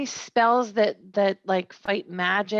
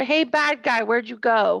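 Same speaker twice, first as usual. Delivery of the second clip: loud shouting, yelling; 3 dB louder than usual. In a tabletop game, a player's character calls after a vanished enemy: shouting. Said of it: "I shout".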